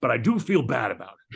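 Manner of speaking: gruff put-on voice. Retelling a conversation about waving at trams: Harrison Ford impression. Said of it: "you do a great Harrison Ford impression".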